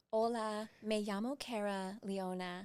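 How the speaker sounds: Spanish spoken with an American accent. Showing what fake Spanish sounds like: Spanish with an American accent. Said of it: "speak Spanish with a American accent".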